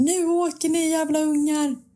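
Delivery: high-pitched, loud yelling. Asking another parent whether they ever yell at their kids, the speaker demonstrates: mock yelling at the kids. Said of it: "har du någon gång skrikit åt dem".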